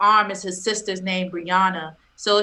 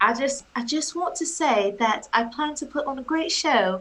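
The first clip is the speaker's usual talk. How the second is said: put-on English accent, pitched up; 5 semitones higher than usual. Asked for a message to the fans, answering in a put-on english accent. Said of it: "That's my English accent".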